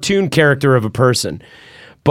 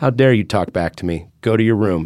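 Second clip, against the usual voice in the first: real, soft, quiet, fatherly scolding tone; 4 semitones lower than usual. Retelling a father's rebuke after talking back, imitating father's soft voice. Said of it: "He just got real soft and he said".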